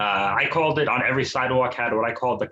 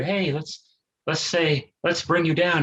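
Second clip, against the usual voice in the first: put-on gloomy, sad, pitched-up announcer voice; 5 semitones higher than usual. Mocking gloomy mental health videos on YouTube, in a mock-sad NPR voice. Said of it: "in a really sad uh, N P R voice".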